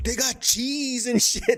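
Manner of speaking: very high, stretched-out, drawn-out, silly, goofy yell. Retell how a silly, fun dude cracked everybody up, imitating someone yelling. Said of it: "he just starts yelling".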